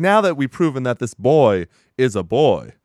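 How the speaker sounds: exaggerated cartoon-style Southern accent. Retelling what a man said during a match, in a Foghorn Leghorn voice. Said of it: "I was doing a Southern accent".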